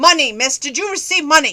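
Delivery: loud, high, mock angry strange voice. Retelling a scam phone call, imitating an irate caller. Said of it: "The strange voice".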